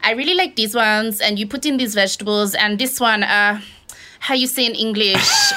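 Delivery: heavy, put-on Spanish accent. Retelling a TV cooking segment: imitating a put-on Spanish accent. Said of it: "talking with an accent".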